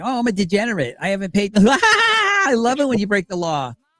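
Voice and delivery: put-on laughing while talking. Mimicking how she laughs while she talks about breaking the law: imitating her laughing while talking. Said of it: "Listen to the way she laughs, like".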